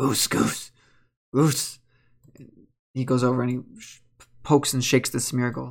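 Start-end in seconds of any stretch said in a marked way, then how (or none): 0.0-1.8 hushed, urgent, anxious whisper in a creature voice. A Zangoose pops from a Pokeball while people sleep, quiet Zangoose voice. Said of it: "he's gonna go quietly".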